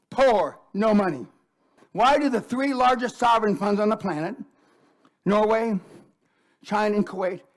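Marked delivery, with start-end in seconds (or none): 0.2-1.3 slow, deliberate, raised word-by-word emphasis. Repeating a point a second time for listeners; said slowly. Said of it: "I'm going to say it again slow".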